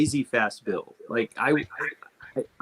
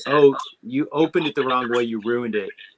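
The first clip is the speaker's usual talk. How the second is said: ordinary talk, nothing marked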